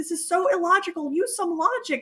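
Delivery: high, acted-out shouting yell. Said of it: "yelling at her, the T V".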